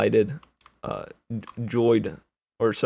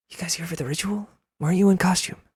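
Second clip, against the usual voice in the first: in a whisper, higher; 9 semitones higher than usual. Voicing a penguin who stops and looks over at the players: whispering. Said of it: "looks over to you and whispers".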